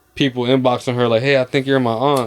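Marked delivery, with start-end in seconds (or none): none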